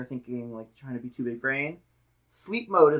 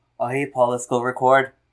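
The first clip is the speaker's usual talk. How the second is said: bad, clumsy put-on Irish accent, raised; 7 dB louder than usual. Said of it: "I made [name] sound Irish there".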